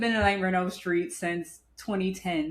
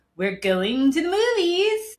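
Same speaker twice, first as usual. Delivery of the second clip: very high, slow, drawn-out horror-host voice; 10 semitones higher, 4 dB louder than usual. Host opening his first solo horror podcast, in a Crypt Keeper voice. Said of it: "the Crypt Keeper".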